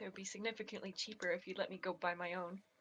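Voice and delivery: soft, grumbled, muttered under the breath. Told the items cost fifty gold apiece, the player's character replies: muttering under breath. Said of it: "I kind of mutter under my breath".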